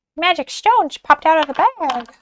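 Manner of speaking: weird squeaky cartoon character voice. Doing a soulmate reading, announcing the stones: weird Mickey Mouse voice. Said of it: "I just did like a weird Mickey Mouse voice".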